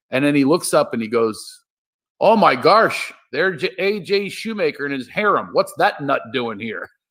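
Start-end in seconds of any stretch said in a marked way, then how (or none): 2.2-6.9 put-on Shamokin Pennsylvania coal-country accent, high. Retelling a man's remarks in his Shamokin, Pennsylvania coal-mining accent. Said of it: "He's got this like Shamokin, Pennsylvania coal mining accent".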